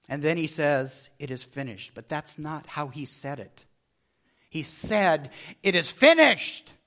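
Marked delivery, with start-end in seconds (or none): 5.6-6.6 triumphant cry, loud and high. A speaker retells how the words were really spoken: retelling a cry of triumph. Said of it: "It was a cry of triumph".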